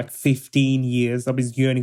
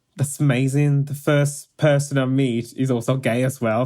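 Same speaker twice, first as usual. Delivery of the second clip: plain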